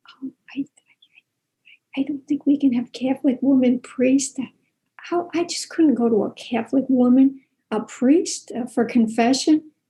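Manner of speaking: secretive, hushed half-whisper with hesitant, halting start. Retelling what a lady said at a picket: imitating someone half-whispering.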